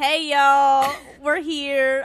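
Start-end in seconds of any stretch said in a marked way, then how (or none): 0.0-0.9 very loud, fake put-on Southern accent. Podcast intro, co-host now in Texas, put-on Southern accent. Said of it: "I had the hey, y'all. That's about it".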